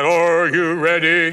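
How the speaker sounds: deep, loud, booming, menacing, ominous voice. Recalling a relative telling a ghost story to children, the speaker imitates the death angel's question in a booming ominous voice. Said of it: "Frank had a booming voice".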